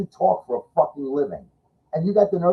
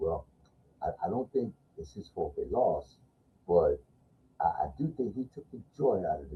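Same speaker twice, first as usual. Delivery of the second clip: put-on utterly solemn, very low, quiet, hushed; 10 semitones lower, 12 dB quieter than usual. Retelling what a man said about a player after the loss, imitating a very serious voice. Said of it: "in the most serious voice you'll ever hear".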